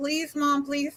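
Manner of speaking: tearful, crying, pleading, begging voice. Retelling being refused a school trip waiver: imitating her own crying plea. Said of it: "And I was crying".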